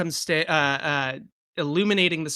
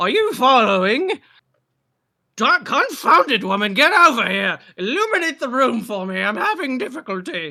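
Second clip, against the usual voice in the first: loud character voice, pitch swinging and swooping; 8 semitones higher, 7 dB louder than usual. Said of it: "and now Tim Curry".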